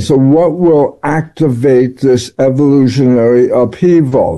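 ordinary delivery

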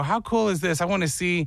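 plain

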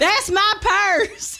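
very high-pitched cartoon kid voice. Reminded of Bobby Hill, the speaker quotes him: Bobby Hill impression. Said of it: "that was pretty good".

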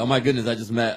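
ordinary talk, nothing marked

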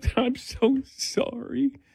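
soft, weepy, fake tearful crying. Asked whether rehearsing in the car chokes them up, the speaker answers mock crying. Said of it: "I'm already crying".

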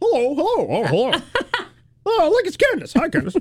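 very high, swooping, silly cartoon puppet voice. Acting out a stepdad chasing the sister with puppets, in a cartoon puppet voice. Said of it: "started chasing after her using cartoon voices".

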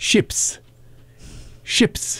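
whispered put-on British accent slipping into Australian. Repeating the punchline's key word: put-on British accent sounding Australian. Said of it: "You should not have done an accent with that".

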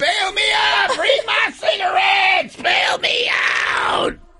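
high-pitched mock screaming. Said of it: "I'll be screaming at".

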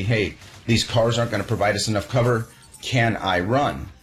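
ordinary talk, nothing marked

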